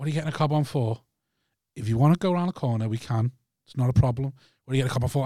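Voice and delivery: put-on, dead calm delivery. Retelling how the other driver answered the screaming: imitating a dead calm reply. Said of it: "he's just dead calmly gone".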